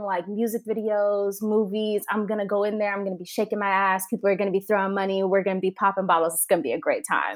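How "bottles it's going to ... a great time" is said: normal talking voice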